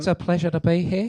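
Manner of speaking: put-on New Zealand accent. Taking turns doing accents, this one in a new zealand accent. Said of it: "It's my New Zealand accent".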